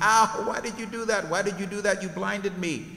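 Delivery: high, squawking bird voice. Narrating a story, Blue Jay cries out after being blinded: squawking Blue Jay voice. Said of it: "Blue Jay squawking".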